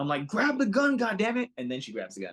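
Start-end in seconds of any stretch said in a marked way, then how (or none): 0.3-1.5 very high, loud screaming yell. Retelling watching a movie on the phone: imitating screaming at phone. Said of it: "screaming, like, at my phone".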